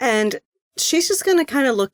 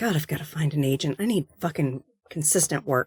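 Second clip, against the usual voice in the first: low, soft, grumbling mutter under the breath; 6 semitones lower, 7 dB quieter than usual. Paying for a parking meter, the character grumbles to herself, muttering under breath. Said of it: "she just mutters under breath".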